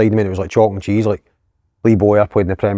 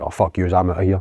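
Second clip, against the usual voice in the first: put-on angry, hot-headed outburst, quieter; 4 dB quieter than usual. Retelling walking out on unpaid wages: imitating own hot-headed outburst. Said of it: "at that time I was dead hot-headed".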